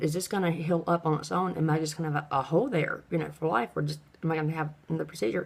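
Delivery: plain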